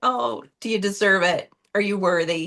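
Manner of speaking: usual speaking voice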